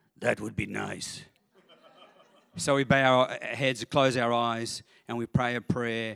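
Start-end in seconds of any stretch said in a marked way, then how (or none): 0.2-1.2 put-on heavy, thick German accent. Recounting a man's answer to an invitation to pray, thick German accent. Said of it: "in his thick German accent".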